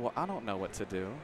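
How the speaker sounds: low, soft, helpless murmur. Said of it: "I was sitting there like".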